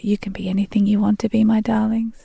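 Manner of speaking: soft, quiet whisper. Retelling what is said to the children at bedtime: retelling a whisper. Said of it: "I just whisper".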